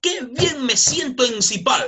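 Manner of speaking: bright, slow, happy, cheerful lift. Modeling a line for classmates to repeat, in a happy, cheerful tone. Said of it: "con un tono de alegría".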